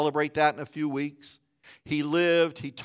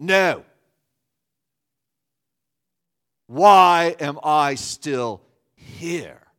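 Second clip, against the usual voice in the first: put-on South African accent, louder and slower; 6 dB louder than usual. Retelling Pat's reply after hearing she'd stay overnight, in her South African accent. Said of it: "with that South African accent".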